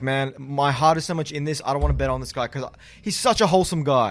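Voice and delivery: ordinary delivery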